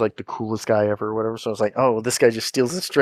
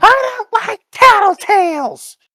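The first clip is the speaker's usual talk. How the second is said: top-of-the-lungs shriek, very high, very loud, furious; 9 dB louder than usual. Retelling how a substitute teacher screamed at a second grader: imitating a scream. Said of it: "her screaming at the top of her lungs".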